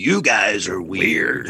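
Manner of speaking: sudden deep slow voice. Speaker retells a man getting out of the car, imitating his changed voice. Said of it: "he changed his voice like that".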